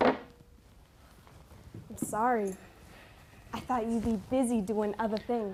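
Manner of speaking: soft, hushed, very quiet whisper. Apologizing to the one awake while trying not to wake Steffi, whispering. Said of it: "What are you whispering for?".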